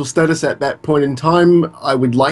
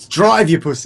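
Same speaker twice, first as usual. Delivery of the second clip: put-on Australian accent; 3 semitones higher than usual. Showing how a quoted line should be said: australian accent. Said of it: "You gotta say that like an Australian".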